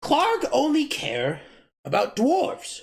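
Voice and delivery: high goblin voice with broken, mangled grammar. Voicing the goblin Yemek, speaking in broken Common. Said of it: "he's speaking in like broken common".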